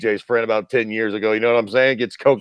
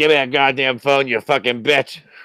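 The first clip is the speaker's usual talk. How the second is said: put-on wasted, drunk, out-of-control outburst; 3 semitones higher than usual. Imitating B J Penn after calling him drunk: imitating drunk B J Penn. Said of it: "coked up and drunk off his fucking ass".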